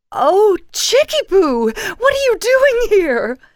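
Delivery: excited, delighted swooping squeal, very high and very loud. A woman spots the narrator unexpectedly and jogs over to hug them, squealing with delight. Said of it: "squealed as she gave me a hug".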